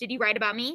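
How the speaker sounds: plain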